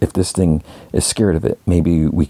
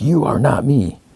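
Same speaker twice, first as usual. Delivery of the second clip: play-acted angry outburst, voice raised and pitched up; 8 semitones higher than usual. Retelling a father's answer to his son, retelling a raised voice. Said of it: "Lee like raises his voice".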